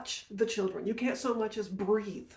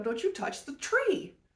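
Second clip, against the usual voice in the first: mock, high-pitched screaming; 9 semitones higher than usual. Retelling screaming at a kid pulling on the apple tree, retelling a scream. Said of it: "I screamed at him".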